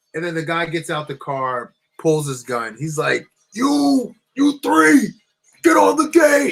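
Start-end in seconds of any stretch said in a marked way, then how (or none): 3.6-6.6 shrill, very high screaming. Recounting a guy who got out and pulled his gun, retelling his screaming yell. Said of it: "He's yelling, like screaming".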